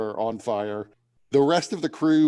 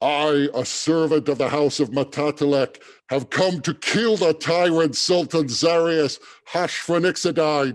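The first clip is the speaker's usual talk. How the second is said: big, booming, carrying yell; 4 semitones higher, 3 dB louder than usual. The copper Dragonborn at the prow of the ship yells out, booming yell. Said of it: "you hear a booming voice".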